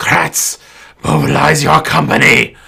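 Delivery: hissing voice. A narrator voices a sword-wielding figure turning to attack, in a hissy voice. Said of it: "This hissy voice comes out".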